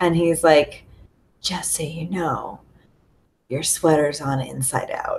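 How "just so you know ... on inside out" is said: hushed, soft, close in-your-ear whisper. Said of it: "he like is whispering to me".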